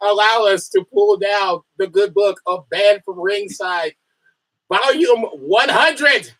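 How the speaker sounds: slow, drawn-out, mock solemn preaching voice.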